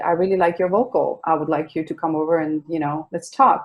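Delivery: normal talking voice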